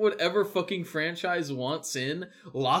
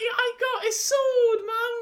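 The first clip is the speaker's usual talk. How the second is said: very high, slow, botched put-on Australian accent; 3 dB louder than usual. Trying to voice a sword-wielding Bluey: failed Australian accent. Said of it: "Wait, that's not Australian".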